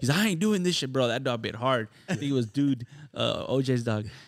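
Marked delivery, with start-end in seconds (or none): 0.2-1.1 acted fed-up, angry outburst, pitched up. Retelling the bitten actor quitting: imitating someone angry. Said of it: "He was pissed".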